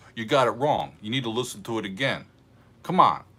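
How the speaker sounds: put-on New Jersey accent. Retelling what a guy in north jersey told him, in a new jersey accent. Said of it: "I'm doing Jersey".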